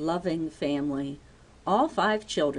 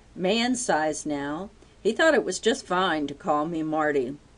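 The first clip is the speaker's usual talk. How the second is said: ordinary delivery, nothing marked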